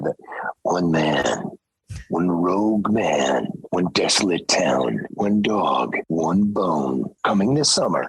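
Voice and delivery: deep movie-trailer announcer narrator voice. The speaker shows off the voice he says he does: movie trailer voice. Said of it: "I do the movie trailer voice guy".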